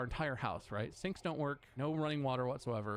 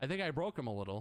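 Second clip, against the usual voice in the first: plain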